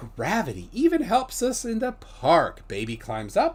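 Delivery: silly, sing-song, funny put-on storybook reading voice. Reading a text aloud, deciding to use a funny put-on voice. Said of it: "I gotta use a funny voice".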